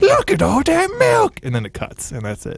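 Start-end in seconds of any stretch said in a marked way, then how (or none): 0.0-1.4 very high, slow, drawn-out deranged voice. Pitching a video idea, acting out the final line: crazy deranged guy. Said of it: "crazy deranged guy looks at the camera and goes".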